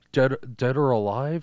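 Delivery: put-on cyborg voice. Quoting the movie cop's line: douchey RoboCop impression. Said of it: "He's like".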